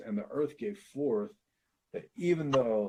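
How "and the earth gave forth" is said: normal talking voice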